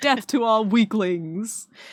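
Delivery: deliberate, slow, drawn-out demon voice. Recalling a game voice he does, the speaker performs a demonic Mobile Legends voice. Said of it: "the demonic voice".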